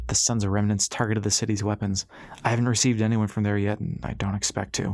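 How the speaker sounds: plain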